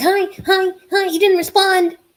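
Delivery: put-on high, loud, eager little-kid voice. Imitating little kids with short attention spans: imitating a little kid. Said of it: "I feel like some little kids".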